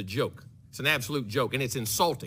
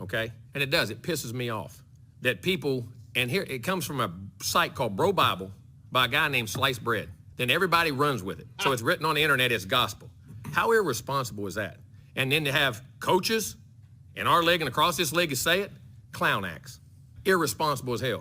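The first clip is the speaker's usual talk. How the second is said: plain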